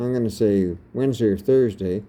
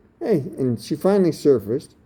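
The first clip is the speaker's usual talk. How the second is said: ordinary talk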